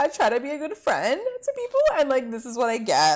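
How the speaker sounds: crying, tearful, wounded whine with swooping pitch. Speaker recaps a fight between Juliet and Hannah, imitating Hannah crying. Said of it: "Hannah's like totally like crying".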